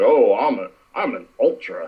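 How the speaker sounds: very slow, drawn-out, mocking, boastful poser voice. Complaining about fans in the stands, mocking a poser fan. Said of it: "it's like".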